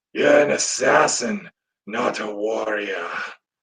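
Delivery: very dark, deep-shadowed, raspy voice. Giving listeners a taste of a character's voice: dark raspy elf voice. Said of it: "very dark, very raspy voice".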